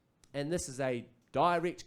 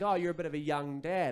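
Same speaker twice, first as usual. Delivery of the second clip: usual speaking voice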